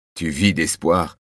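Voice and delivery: ordinary talk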